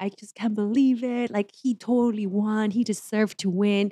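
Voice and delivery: play-acted slow, weepy child's sobbing lament. Retelling how her son reacted when his favorite chef lost, imitating a crying child. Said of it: "actually crying and was just like".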